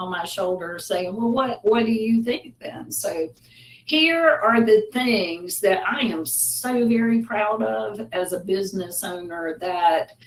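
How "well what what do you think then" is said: snide, doubting, sarcastic, high-pitched. Acting out a voice on her shoulder questioning her: imitating a sarcastic voice. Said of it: "I sort of sarcastically sit on my".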